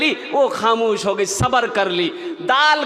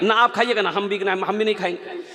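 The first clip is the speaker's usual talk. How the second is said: plain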